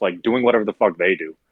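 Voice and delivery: low, spiteful tone dripping with malice. Describing the staff during busy shifts at work, said with malice. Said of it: "You said that with such malice".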